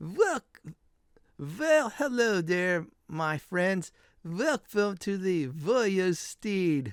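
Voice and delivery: hearty, jolly put-on tavern-keeper voice and accent. Narrating a game scene, voicing the innkeeper who greets the friends; innkeeper accent. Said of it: "I'll try my best for uh accent".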